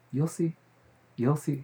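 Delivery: low-key, hushed, quiet menacing tone. Retelling mom's reply to the apologies: imitating mom's quiet threat. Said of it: "She'd be like".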